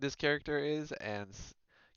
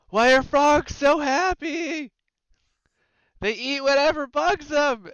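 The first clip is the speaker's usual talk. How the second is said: very high, very loud, slow shout; 14 dB louder than usual. Voicing a character who is a little winded, shouting a joke: character shouting a joke. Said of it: "he's gonna shout out".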